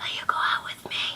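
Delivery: hushed, soft, breathy whisper. Retelling asking someone out, whispering the question. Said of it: "and I whisper".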